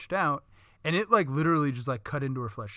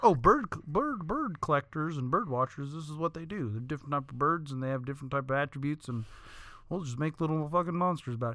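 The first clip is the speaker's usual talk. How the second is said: put-on southern US accent. Retelling what the inventor of Pokemon thought, in a put-on southern accent. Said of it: "He didn't have a southern accent like I just did".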